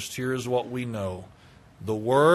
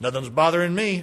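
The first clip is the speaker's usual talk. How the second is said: put-on cocky, arrogant, smug, self-assured tone; 5 semitones higher than usual. Speaker acts out what the listener may say next week, mock-smug tone. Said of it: "you may say in a smug tone".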